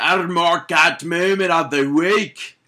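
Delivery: loud, slow attempted Scottish accent that drifts elsewhere. Announcing the mark out moment of the week, attempted Scottish accent. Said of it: "I was going for Scottish".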